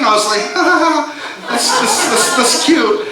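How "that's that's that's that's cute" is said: high voice, laughing it off. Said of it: "on the outside, I was laughing".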